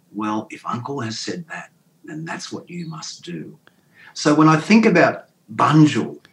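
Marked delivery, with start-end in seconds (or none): 0.2-3.6 calm, very quiet, just above a whisper. Quoting the speaker's elderly mother answering them: retelling a quite calm reply. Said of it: "said quite calmly".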